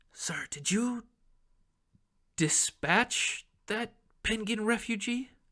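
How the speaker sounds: hushed whisper. A game master voices an assistant whispering in a player's ear, whispering. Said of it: "and he whispers in your ear".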